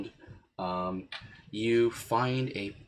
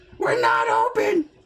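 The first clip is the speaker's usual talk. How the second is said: put-on very loud, very high, cranky, crotchety old man voice; 11 dB louder than usual. Voicing a character shouting through the door: old crotchety voice. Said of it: "an old crotchety voice".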